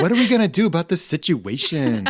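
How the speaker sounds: put-on Southern California Valley Girl accent, swooping pitch. Imitating a friend's habit of saying situation: Valley Girl accent imitating Amanda. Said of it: "that, like, Valley, Valley Girl accent".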